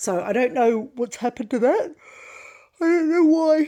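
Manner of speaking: very loud, high speech through a yawn. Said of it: "Sorry, yawning".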